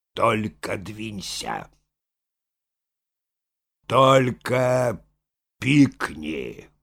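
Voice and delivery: slow, weighty, imposing, swooping, each word pressed. Reading Moshkin's words to a frightened young lady, slow and imposing. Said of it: "произнес медленно и внушительно".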